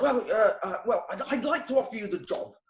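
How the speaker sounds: put-on plummy British accent. Retelling a job interview, quoting the interviewer: imitating a posh BBC London accent. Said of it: "very British, British plum, mm, B B C London accent".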